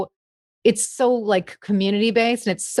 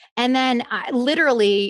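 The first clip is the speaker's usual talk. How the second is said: plain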